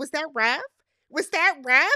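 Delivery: condescending, mocking, talking-down tone. Retelling how Lauren answered a man's remark, mock-condescending. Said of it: "She very condescendingly is like".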